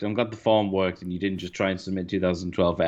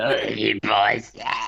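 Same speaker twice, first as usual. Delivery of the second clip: put-on boozy, soused voice; 3 semitones higher than usual. Doing their impression of a character, sounding like a drunk uncle. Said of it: "he always just sounds like a pissed uncle, basically, by the end of our impression of it".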